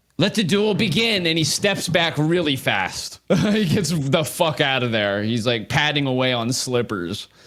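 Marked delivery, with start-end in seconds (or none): 0.2-1.3 high-pitched shouting. Game master voicing a non-player character before rolling initiative; War Clerk Huntoon shouting. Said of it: "War Clerk Huntoon shouts".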